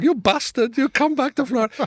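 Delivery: very high put-on Spanish-accented woman's voice. Acting out angry characters in a story by putting on a voice. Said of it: "and then they do in a voice".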